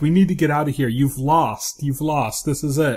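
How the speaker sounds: put-on panicked, pleading tone. Retelling a scene where an assistant urges leaving: imitating someone freaking out. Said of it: "freaking out".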